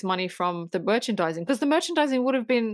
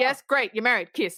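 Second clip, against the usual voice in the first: put-on, fed-up, exasperated voice, higher; 4 semitones higher than usual. Retelling a movie wedding scene as the interrupted priest: imitating a fed-up priest. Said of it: "he's just so fed up".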